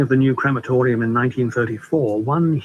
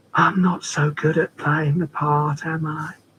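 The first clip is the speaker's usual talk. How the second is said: wispy, thin, forlorn, forsaken ghostly voice; 3 semitones higher than usual. Reading a story, she drops all pretense with him, in a thin, forlorn ghost's voice. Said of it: "Her voice was a ghost's voice, thin, forlorn".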